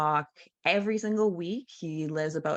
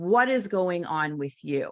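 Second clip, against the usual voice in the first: harsh, furious, very angry voice with no empathy; 4 dB louder than usual. Retelling the father's phone call to the speaker, imitating a very angry voice. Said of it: "in a very angry voice".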